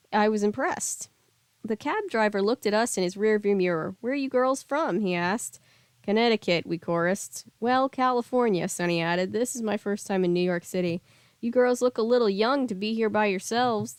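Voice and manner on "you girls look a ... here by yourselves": put-on old man voice with Southern accent. Reading a story aloud, voicing the cab driver talking to the girls: old man southern accent. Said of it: "old man southern accent".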